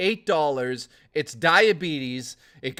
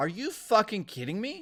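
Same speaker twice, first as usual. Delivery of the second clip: ordinary delivery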